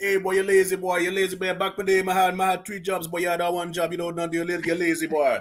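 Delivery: put-on nonstop Jamaican accent, words run in one stream. Describing how a jamaican person talks to a boy, imitating a jamaican accent. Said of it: "a Jamaican will come out and be like".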